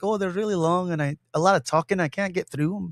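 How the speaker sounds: clumsy, butchered, put-on Irish accent. Quoting a man's reply to a question, in a butchered Irish accent. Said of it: "butcher his Irish accent".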